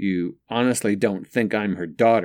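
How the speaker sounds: plain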